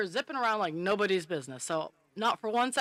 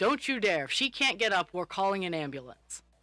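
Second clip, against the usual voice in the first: commanding put-on big girl voice. Retelling what she told a young man across the dining room, in her big girl voice. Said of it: "in my big girl voice".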